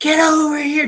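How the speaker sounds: put-on, very high shrieking scream. Retelling how mom screamed for dad to come over: imitating someone screaming. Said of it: "she starts screaming".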